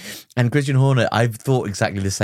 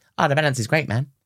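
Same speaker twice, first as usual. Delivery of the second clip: upbeat, cheerful racing-driver radio voice; 4 semitones higher than usual. Imitating a racing driver's positive radio message: Lewis Hamilton impression. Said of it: "quite a good impression".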